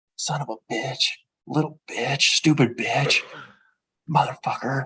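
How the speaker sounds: hushed whisper under the breath, barely voiced. Retelling how a lady swore while other parents walked by, imitating a whisper. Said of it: "she's like whispering it".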